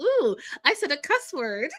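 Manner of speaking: sheepish prim lady voice. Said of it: "smiled, looked over her husband like".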